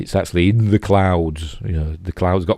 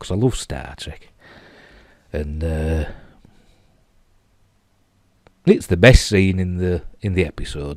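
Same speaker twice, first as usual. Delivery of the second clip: teary, choked-up voice with emotion catching. Describing a favourite scene in an episode, getting emotional. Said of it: "I'm getting a bit emotional now".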